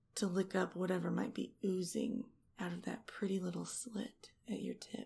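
soft, hushed, seductive whisper. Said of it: "things I'm whispering in your ear".

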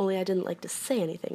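ordinary delivery

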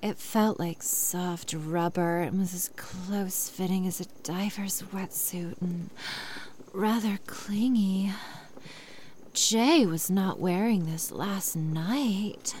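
seductive, breathy, sultry half whisper. Rereading a passage aloud, in a sexy voice. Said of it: "let's say it again in a sexy voice".

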